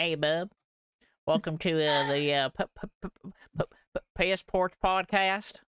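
over-the-top country accent. Podcast host showing how they don't sound, in a full-on hick accent. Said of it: "it's not like we're full on like".

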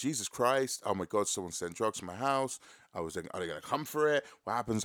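normal talking voice

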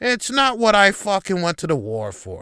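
put-on griping, complaining voice. Complaining about people on their phones: Andy Rooney impression. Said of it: "I fucking feel like I'm Andy Rooney now".

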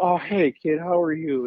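deliberately terrible, drawn-out drawl on "hello". Retelling how Terry greeted people backstage: terrible Terry impression. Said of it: "I do a terrible Terry".

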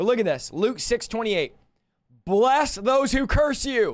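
reading aloud while stifling laughter. Speaker reading a Bible verse aloud, holding back a laugh. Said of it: "I'm trying not to laugh".

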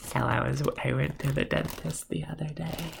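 very slow, dragged-out, creaky drawl. Talking after taking another hit, sounding like Salad Fingers. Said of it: "I sound like salad fingers when I do that".

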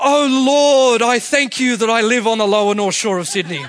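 self-righteous pious voice. A speaker tells an audience how they talk among friends, imitating a Pharisee praying. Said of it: "say it just like one of the Pharisees".

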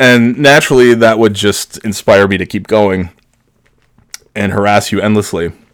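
usual speaking voice

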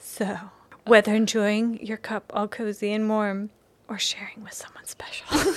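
hushed secret-telling voice. Reading a coffee ad line as coached, like telling a secret. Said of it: "it's like you're telling a secret".

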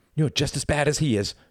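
high, exclaiming cry, crying out. Narrator as Reginald, having thrown his younger brother down, crying out at him. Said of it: "cried Reginald".

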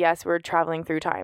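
ordinary delivery

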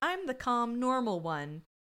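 usual speaking voice

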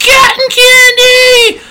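very high, very loud nasal holler, candy drawn out. Imitating a cotton candy seller's call, in a nasal shouted sales call. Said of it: "he'd just like shout it out".

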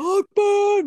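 put-on yelling. Describing an actor's bandit leader scene to a friend, imitating a yell. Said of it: "he yells".

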